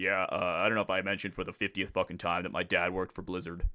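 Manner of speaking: put-on big, deep, bass-voiced streamer voice. Imitating a World of Warcraft streamer's boasting: imitating a streamer's deep voice. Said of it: "deep ass voice".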